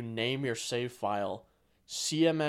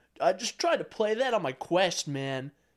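put-on surfer dude voice, loud and pitched up; 7 semitones higher, 5 dB louder than usual. Mocking how a friend imitated him: mocking generic surfer bro voice. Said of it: "sound like a generic, like, surfer bro".

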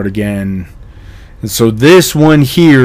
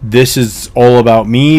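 ordinary talk

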